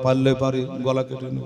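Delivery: hushed and soft.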